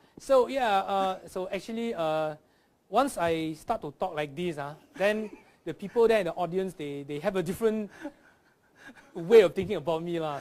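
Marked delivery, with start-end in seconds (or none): 2.9-10.4 put-on Singaporean English accent, lah at the end. Showing how the comedy act switches accents: Singapore accent. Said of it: "I started speaking with a Singapore accent".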